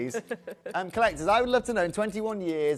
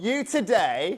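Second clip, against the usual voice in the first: loud, raised voice; 3 semitones higher than usual. A presenter announcing prices to viewers, loud. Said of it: "Excuse me if I'm a bit loud there".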